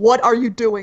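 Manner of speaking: furious, very angry. Player's character grabs a man's shoulder and turns him around; very angry. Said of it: "Like very angrily".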